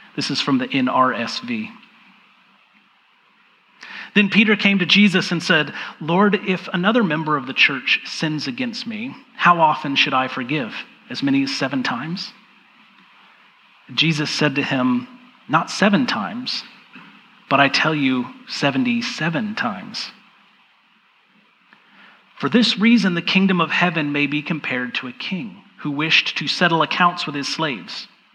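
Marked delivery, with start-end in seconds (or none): 4.2-28.1 slow, attentive reading with long pauses. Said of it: "I'm going to read it slowly".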